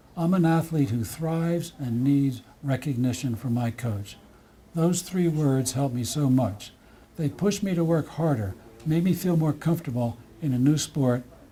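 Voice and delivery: ordinary talk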